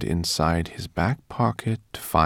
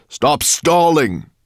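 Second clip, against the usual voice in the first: very loud, very high, shrill bellow; 10 semitones higher, 9 dB louder than usual. Nettlebrand comes close to Barnabas Greenbloom: roaring. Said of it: "roared Nettlebrand".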